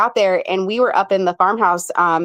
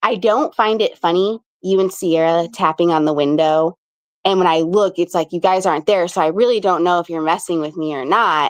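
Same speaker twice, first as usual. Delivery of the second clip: ordinary delivery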